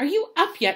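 insistent and demanding. Reading an aunt back outside the boy's door: demanding. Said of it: "She demanded".

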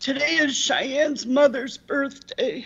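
high, tearful voice, crying. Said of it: "So it's a little emotional".

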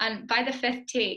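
ordinary delivery

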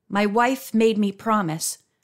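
ordinary talk

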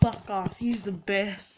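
normal talking voice

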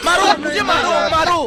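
comic, very high-pitched pleading cry.

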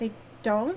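dazed, bewildered, stunned. Touched on the face and told something softly, the listener replies: dazed.

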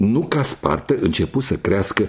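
ordinary delivery

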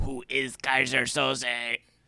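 put-on tiny crab voice, very slow. Showing how the film might have posed its mystery, in a little crustacean voice. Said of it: "It sounded like a little crustacean".

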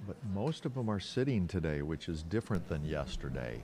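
soft, hushed golf commentator voice.

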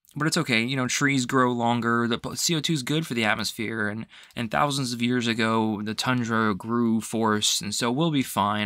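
ordinary delivery

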